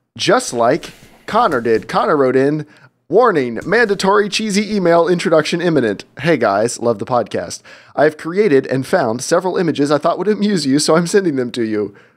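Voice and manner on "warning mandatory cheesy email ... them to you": ordinary delivery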